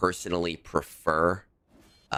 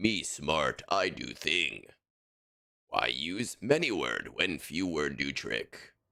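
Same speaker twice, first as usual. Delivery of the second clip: slow, dim, dumb caveman talk; 2 semitones lower, 4 dB quieter than usual. Teasing the other speaker, new to playing Conquest, in a cave-person voice. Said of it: "cave person aesthetic of like".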